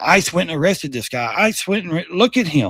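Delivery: ordinary delivery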